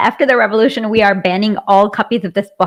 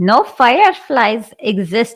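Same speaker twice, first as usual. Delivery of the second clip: put-on, attempted Jamaican accent. Trying the Jamaican aunt's line again: attempted Jamaican accent. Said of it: "before I can imitate this".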